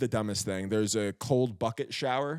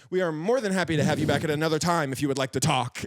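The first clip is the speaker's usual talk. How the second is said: mock polite, prim and sassy; 4 semitones higher, 4 dB louder than usual. Retelling how a sassy staff member told them to leave: imitating a sassy staff member. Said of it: "this just sassy dude just being like".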